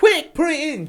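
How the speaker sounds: very high, loud, urgent put-on screaming yell. Retelling a partner's joke in a shop aisle: imitating someone screaming. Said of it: "he was going".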